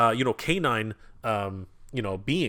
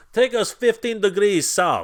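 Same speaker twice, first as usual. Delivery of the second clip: play-acted loud, pitched-up yelling; 9 semitones higher, 6 dB louder than usual. Describing a toy figure, acting out the captain ordering his crew: Captain Schneider yelling orders. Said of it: "he would be yelling orders to his crew".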